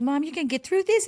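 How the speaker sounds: put-on high, sweet child voice. A mother recalls her son calling her at eleven, imitating a sweet little voice. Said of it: "you would call me with that sweet little voice".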